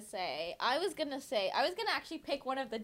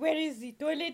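fake French accent laid on thick; 5 semitones higher, 3 dB louder than usual. Retelling a friend asking where the toilet is: imitating a put-on French accent. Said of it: "he put, like, a French accent on it".

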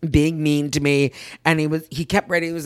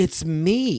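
put-on smarmy, creepy voice; 2 semitones higher than usual. Retelling how Ben Affleck messaged a woman: imitating Ben Affleck, smarmy and creepy. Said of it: "it's creepy or something".

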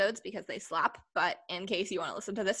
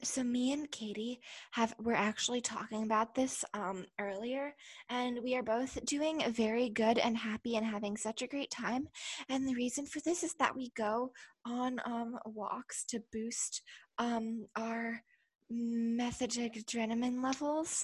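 acted ASMR-style delivery; 4 semitones higher than usual. Answering how they have been doing, jokingly: put-on asmr voice. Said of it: "this is my A S M R voice".

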